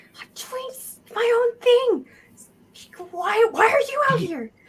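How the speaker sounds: very high, shouted stage whisper. A character scurrying away down an alley, calling back behind him: yell-whispering. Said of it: "he's just like yell whispering at you".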